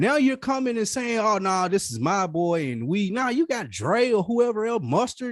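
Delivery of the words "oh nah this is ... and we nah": plain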